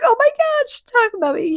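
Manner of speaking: high-pitched excited squealing.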